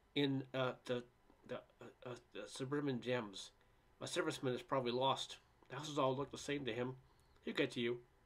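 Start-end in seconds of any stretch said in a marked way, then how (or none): none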